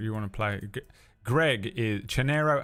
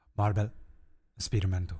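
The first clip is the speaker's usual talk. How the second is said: mock, attempted Spanish accent. Reading a game title aloud, in his best attempt at a Spanish accent. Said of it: "My best, uh, Spanish accent".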